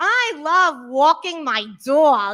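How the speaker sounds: put-on strong, thick, heavy New York accent. Retelling the single audition line the director kept cutting off, strong new york accent. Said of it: "Robin, less New York".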